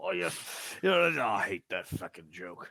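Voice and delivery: muttering under breath. Voicing a character answering a girl's joke: muttering under breath. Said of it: "under his breath where she can't hear him".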